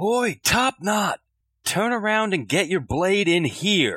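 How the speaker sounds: high, slow, drawn-out yell. A player has their character call out to another character, yelling. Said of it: "And I'm going to yell".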